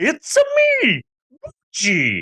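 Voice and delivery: very high, squeaky, swooping, bad put-on Italian accent. Imitating a movie character said to sound like Mario: Mario voice. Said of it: "she's already got the voice".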